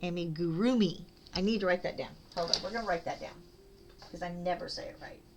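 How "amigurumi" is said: amigurumi with the ru syllable emphasized. Learning to pronounce amigurumi, putting stress on the ru syllable. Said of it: "You put the emphasis on the ru".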